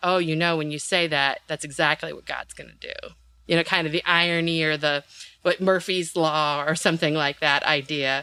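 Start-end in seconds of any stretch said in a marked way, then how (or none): none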